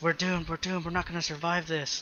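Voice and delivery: frightened, hushed whispering. Voicing a crowd of people behind the players: whispering frightened townsfolk. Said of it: "You hear people whispering in the back".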